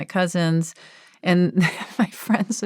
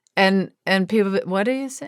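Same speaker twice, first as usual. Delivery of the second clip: usual speaking voice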